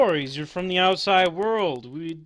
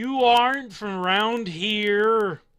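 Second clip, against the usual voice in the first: put-on very drunk voice, higher; 5 semitones higher, 3 dB louder than usual. Narrating a tavern scene, voicing a regular who walks up to the orc, very drunk. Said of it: "These two, very, very drunk. / They're stumbling out and they look to see you guys, / This one will pat you on the head, / very, very drunk".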